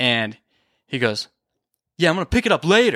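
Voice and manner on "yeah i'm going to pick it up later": acted combative, challenging, confrontational tone, pitched up. Retelling a driver's reply after littering: imitating a confrontational tone. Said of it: "he's very confrontational in tone".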